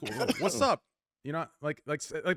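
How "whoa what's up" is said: high-pitched, riled-up, mad outburst. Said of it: "get mad at me, get mad at me, like, you be like".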